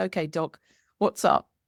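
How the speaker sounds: play-acted, light, playful teasing tone. Retelling what someone said while teasing: imitating a teasing remark. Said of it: "he was teasing me and he said".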